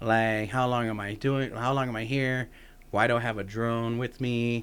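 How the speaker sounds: normal talking voice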